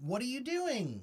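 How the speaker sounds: voice lifts at the end with rising tune on doing. Explaining english tone, demonstrating a rising question intonation. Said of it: "Where we go up with a question".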